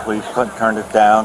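normal talking voice

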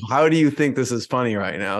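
ordinary delivery

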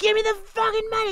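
mock, shrill, jarring, sudden, very high scream. Retelling a jarring movie scene with the drug dealer: imitating Chris R screaming. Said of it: "he's just, like, screaming".

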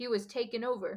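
ordinary delivery

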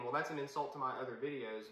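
ordinary talk

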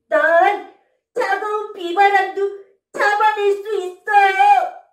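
brave, cheerful, bright, spirited little round creature voice. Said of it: "용감하고 씩씩한 동글이야".

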